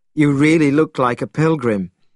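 ordinary talk

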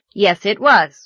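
brazen, cheeky, insolent, unabashed tone. Reading a story, Anthony answers his teacher Anne's question: insolent. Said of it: "said Anthony insolently".

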